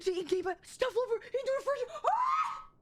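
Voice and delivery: shrill, swooping, bursting excited yell. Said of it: "that was loud".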